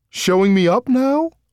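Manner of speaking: spoken through laughter, very high-pitched and slow. Dak asks Sarah after she swings herself to the ground, with a laugh. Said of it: "Dak asked with a laugh".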